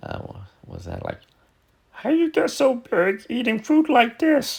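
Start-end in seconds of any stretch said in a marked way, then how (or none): 1.9-4.6 very high, squeaky puppet-creature voice. Comparing two puppet voices by the same performer, the speaker does a Yoda voice. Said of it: "and then you have Yoda".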